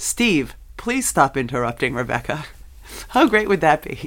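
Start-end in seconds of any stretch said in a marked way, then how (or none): 0.0-2.4 artificial intelligence voice, like a smart speaker. Speaker imagining what their Alexa might say unprompted to Steve, Alexa AI voice. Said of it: "said in her artificial intelligence voice".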